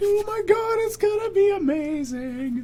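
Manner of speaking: very high, slow, gushing put-on girly voice. Reacting to news about a New Vegas project, in a high-pitched girly voice. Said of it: "that was the high pitched girly voice".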